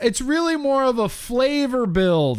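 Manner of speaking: mock, very high yelled shout. Retelling Ruby's husband yelling back at people driving off: imitating Josh yelling. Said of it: "Josh yells back at them".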